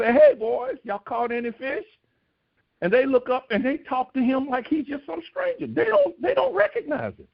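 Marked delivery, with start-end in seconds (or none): 0.1-1.9 put-on holler, calling out. Retelling a call from the shore across the waters: imitating a holler over water. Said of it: "he hollers out over the, over the waters".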